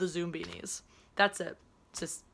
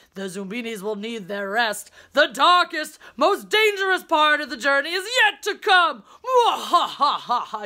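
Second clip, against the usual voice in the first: mock, very loud, booming, drawn-out villainous laugh; 7 semitones higher, 9 dB louder than usual. Describing a game's campsite, the speaker acts out the game character's evil laugh. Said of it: "gives this great evil laugh".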